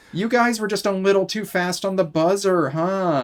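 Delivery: rubbing-it-in taunting jab. Retelling what the host said to contestants: imitating someone rubbing it in. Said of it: "He rubs it in".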